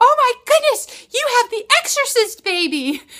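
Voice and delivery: very shrill, very high, very loud shriek. Retelling what the lady across the counter screamed: imitating a scream. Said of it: "and she screamed".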